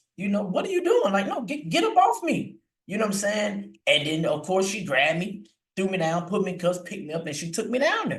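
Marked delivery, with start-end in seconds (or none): 0.2-2.6 put-on very high, rising, protesting yell. Recounting a police officer trying to cuff them, retelling own yelling. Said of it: "I didn't start yelling back at this lady".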